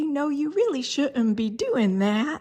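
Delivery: sugary sweet voice. Showing the voice people use to tell a dog no, sweet little voice. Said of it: "this sweet little voice".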